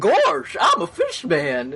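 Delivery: goofy cartoon voice, swinging high in pitch. Trying a voice for a fish man after failing at Donald, in a Goofy voice. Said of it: "That's goofy".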